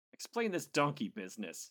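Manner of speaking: loud, high, swooping, sharp exclaiming cry. Egan addresses the professor, crying out. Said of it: "egan cried".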